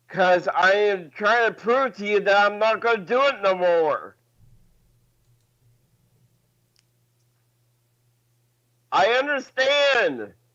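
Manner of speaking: upset, earnest, emotional, insistent tone. Answering a critic on a call: emotional and loud. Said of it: "getting so emotional and loud".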